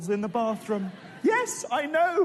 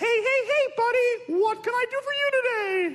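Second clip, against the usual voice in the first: very high-pitched cartoon mouse voice; 10 semitones higher than usual. Acting out a comedian's bit where Mickey Mouse answers the phone, in Mickey Mouse voice. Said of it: "Mickey Mouse answers the phone".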